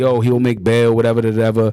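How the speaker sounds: ordinary delivery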